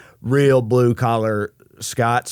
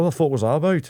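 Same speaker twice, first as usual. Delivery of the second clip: put-on high, indignant, offended drunk Scottish accent; 6 semitones higher than usual. Retelling how a drunk man in a bar confronted a friend: imitating an offended drunk Scottish man. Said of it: "a drunk Scottish guy who saw him use hand sanitizer and got, like, offended".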